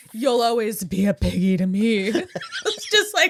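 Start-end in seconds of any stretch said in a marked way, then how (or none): 0.1-2.0 put-on, heavily overdone sultry voice, pitched lower. Act out how they said the line, imitating Salma Hayek's sexuality. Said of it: "with like the sexuality of Salma Hayek. It was like so much fucking mustard on that word".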